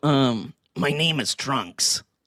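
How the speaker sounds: put-on anime character voice. Asked for a quick Dragon Ball Z impression, doing a Trunks impression. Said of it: "Give me a quick Dragon Ball Z impression".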